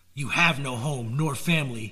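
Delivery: ordinary delivery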